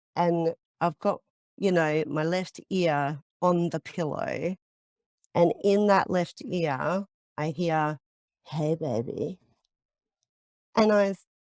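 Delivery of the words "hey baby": put-on creepy spirit voice. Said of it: "the way the spirit said it, it was so creepy".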